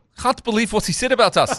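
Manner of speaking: rough, unconvincing South African accent, very high pitched. Speaker tries an accent for an imagined line, admitting it's not good: not-good South African accent. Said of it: "I don't have a good South African accent".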